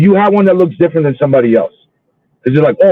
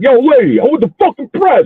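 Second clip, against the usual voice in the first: thick, exaggerated New York accent, pitched up; 9 semitones higher than usual. Retelling what they said to a lady, caught on tape, beefed-up new york accent. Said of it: "I gotta beef up the accent, the New York accent".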